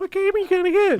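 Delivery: squeaky, very high put-on voice. Retelling a trip to GameStop, imitating girlfriend asking: put-on voice for girlfriend. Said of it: "that's just the voice I'm doing".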